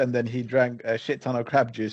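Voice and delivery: normal talking voice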